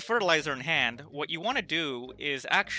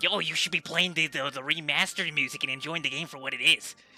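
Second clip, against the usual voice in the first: put-on pushy, nagging voice. While gaming, imitating what Andrew would say about the music: Andrew impression. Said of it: "this is what my impression of Andrew sounds like".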